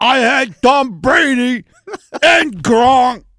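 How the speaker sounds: very slow, loud, big dopey dim-witted voice. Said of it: "sounds like the dumbest dude in the world saying".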